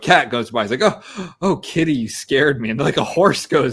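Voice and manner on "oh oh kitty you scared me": acted-out young girl voice, horror-film style. Acting out a scene from Scary Movie where a cat goes by: imitating the girl in Scary Movie. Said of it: "when the girl's in the, in the garage".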